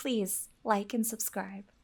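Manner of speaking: polite, modest British style. A speaker shows the others how he will do it: very modest british manner. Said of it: "The very modest British".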